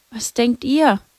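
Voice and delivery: timid, subdued. Hidden by a fountain, she asks the others, meek. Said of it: "fragte Lucia kleinlaut".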